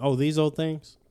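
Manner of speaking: plain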